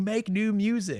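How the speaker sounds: very high, shrill, high-pitched scream.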